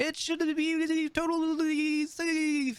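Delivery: very high shout buffeted and torn by wind. Voicing a character calling across spinning blades, yelling over buffeting wind. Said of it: "That's my buffeted voice".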